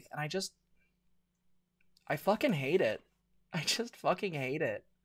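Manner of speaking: emotionally upset. Ranting about people piling on others online: getting emotional. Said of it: "I'm getting emotional".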